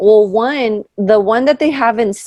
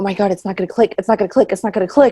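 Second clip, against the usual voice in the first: put-on frantic, fast, repeated panicked speech. Retelling what a panicking stranger on a ride said: imitating someone freaking out. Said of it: "freaking out".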